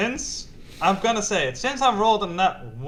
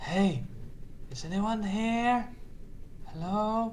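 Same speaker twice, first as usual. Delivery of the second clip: very quiet, half-whispered, calling out; 10 dB quieter than usual. A player's character calls into a room between candles, half-whispering. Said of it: "I whisper into the room".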